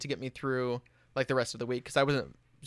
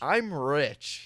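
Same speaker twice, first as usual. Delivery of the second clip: acted-out abrupt, blurted shouted yell; 4 dB louder than usual. Retelling a joke yelled at a crowd about paying: retelling a yell. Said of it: "and I just yell".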